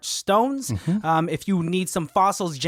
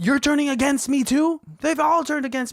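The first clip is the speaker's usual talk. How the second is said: mock all-out yelling, very high; 10 semitones higher than usual. Retelling a show scene where he turns on her: imitating someone yelling. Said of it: "straight up yelling".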